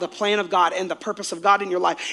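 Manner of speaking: usual speaking voice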